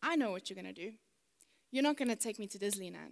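mock-deadpan delivery. Retelling what she said to him as he moved to reprimand her, mock-deadpan. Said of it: "she very dryly said to him".

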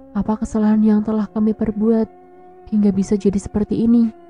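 ordinary delivery, nothing marked

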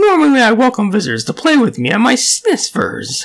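deranged comic voice. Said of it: "the funny and deranged Booster".

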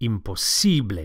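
stress on the si syllable in imposible. Teaching how to say imposible, with the stress on si. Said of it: "Don't forget to stress the sible".

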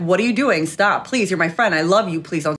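ordinary talk, nothing marked

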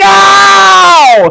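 very high, stretched, drawn-out wailing scream. Retelling a story about the cat and catnip: imitating dad screaming. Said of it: "my dad's screaming".

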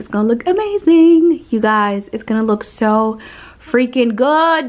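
loud, full-voiced. Showing you guys where the lights will hang, speaking loud. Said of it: "I'm sorry, I'm so loud".

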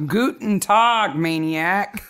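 put-on German accent mixed with Southern drawl. Podcast hosts greeting their listeners, the Maniacs: German Southern accent. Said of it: "My German Southern accent".

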